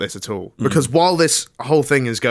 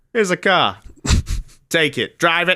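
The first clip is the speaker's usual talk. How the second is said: put-on New York Italian mob boss accent, pitched up; 6 semitones higher than usual. Speaker acts out Ferrari handing over a car: New York mob boss accent. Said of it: "It sounded like a mob boss in New York City".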